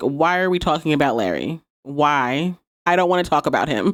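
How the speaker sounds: low, mock irritated, fed-up grumble. Recapping a show scene, acting out a character's reply, mock-annoyed. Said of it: "Alex looks visibly annoyed".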